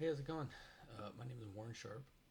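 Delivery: super timid. Warren sharp introduces himself in his first video, super timid. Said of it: "Excuse me if I sound super timid".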